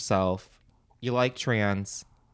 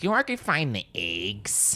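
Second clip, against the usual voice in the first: put-on Midwestern accent laid on thick, swooping. Retelling a friend asking a stranger for eggs, thick midwest accent. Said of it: "the most Midwest accent you could fucking find".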